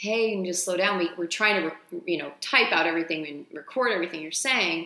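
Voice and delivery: ordinary delivery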